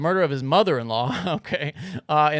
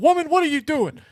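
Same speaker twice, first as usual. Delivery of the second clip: very high-pitched sitcom-dad voice; 12 semitones higher, 4 dB louder than usual. Retelling how your dad reacts when she screams at night, imitating her dad's voice. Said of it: "why is your dad sound like the dad from Good Times?".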